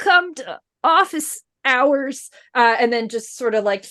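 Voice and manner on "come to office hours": forlorn, tinny robotic voice, pitched up. Narrating a fallen figure's final words, in a sad tinny robotic voice. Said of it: "in like a kind of tinny robotic voice".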